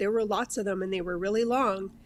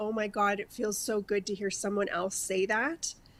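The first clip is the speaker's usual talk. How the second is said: put-on laughing through tears, quieter; 4 dB quieter than usual. Retelling hearing someone describe similar hard days, imitating laugh-crying. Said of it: "I was laugh crying with you going".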